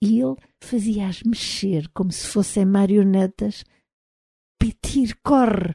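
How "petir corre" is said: exclaiming, crying out. The narrator shouts to someone to run, exclaiming.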